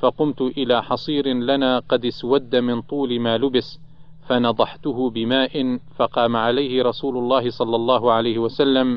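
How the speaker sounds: plain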